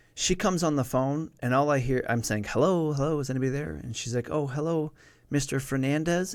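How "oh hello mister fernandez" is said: put-on timid, meek, distressed little voice, drawn out. Retelling a phone call where a caller greets him, imitating a soft, meek, distressed voice. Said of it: "really soft, really meek, clearly distressed voice".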